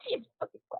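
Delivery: whispered, hushed, startled little yelp. Voicing a character who hears a sudden whisper in her head: startled yelp. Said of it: "yelp a little".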